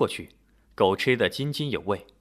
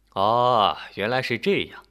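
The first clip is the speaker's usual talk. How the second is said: usual speaking voice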